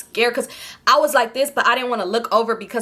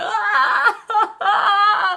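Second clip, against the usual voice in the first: mock very high, sobbing, crying wail; 10 semitones higher than usual. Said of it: "I'm crying my eyes out".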